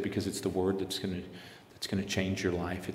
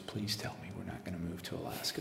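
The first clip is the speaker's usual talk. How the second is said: mock crying with tearful, begging, pleading tone; 8 dB quieter than usual. Retelling how she reacted on seeing the frozen lake: imitating someone crying. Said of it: "she breaks down in tears".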